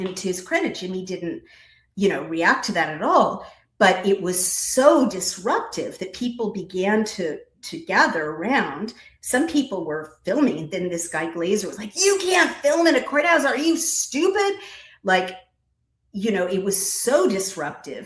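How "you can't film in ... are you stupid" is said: acted-out shrill, very high, top-of-the-lungs yell. Retelling how a man named Glazer yelled at people filming, retelling Glazer's shouting. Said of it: "shouting at the top of his lungs".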